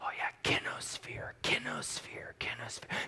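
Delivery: eager, hushed, secretive whispering, repeated over and over. Retelling a class where everyone repeats a new word; imitating people whispering. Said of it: "They're whispering kinosphere over and over".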